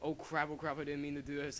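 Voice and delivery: ordinary delivery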